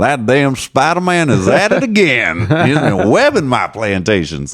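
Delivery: high, swooping character voice, wide pitch swings. Retelling a stand-up bit with an impression of Robert E. Lee.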